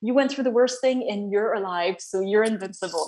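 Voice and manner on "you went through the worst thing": usual speaking voice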